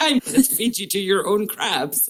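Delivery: put-on upper-class, posh Etonian English accent. Speaker retells a line Damon said in a game, imitating Damon's posh Etonian accent. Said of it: "in his posh Etonian accent".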